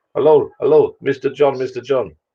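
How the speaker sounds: put-on Indian accent. Retelling a phone call from a random number while stuck in traffic: imitating an Indian accent. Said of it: "Am I allowed to do an Indian accent".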